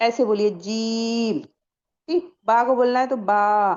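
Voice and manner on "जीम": jeem with the ee vowel stretched long. Teaching how to pronounce the letter jeem: drawn-out vowel in jeem. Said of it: "जीम को मैंने ज्यादा खींचा ना।".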